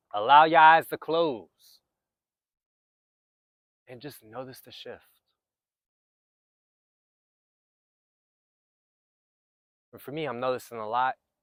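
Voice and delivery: slow, grounded delivery. Guiding listeners to close their eyes and notice the shift, slower, grounded speech. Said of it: "I'm speaking just a bit more slower".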